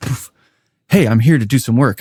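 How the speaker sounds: put-on AI agent voice. Describing auto research, acting out a newly woken LLM, impersonating an AI agent. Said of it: "I love doing an impersonation of what it does".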